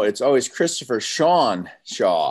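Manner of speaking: name stressed, said slowly.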